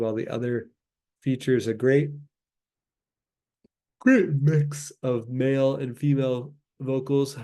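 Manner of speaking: sleepy, tired, yawning delivery. Speaker recording a music review in the evening, yawning and tired. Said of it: "I'm yawning a lot today".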